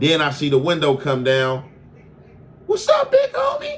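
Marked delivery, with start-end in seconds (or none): 2.7-3.8 tiny, very high-pitched, squeaky little voice. Retelling a driver greeting him from a car window, in Frankie's little squeaky voice. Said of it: "I hear the little squeaky voice".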